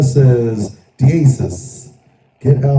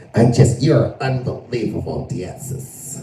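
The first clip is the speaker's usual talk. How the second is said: whispered, very slow, soft, breathy woman's voice; 6 dB quieter than usual. Retelling a woman's reaction, put-on woman's voice. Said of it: "Why is that your go-to woman voice".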